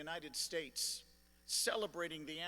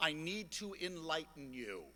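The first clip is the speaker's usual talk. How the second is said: ordinary talk, nothing marked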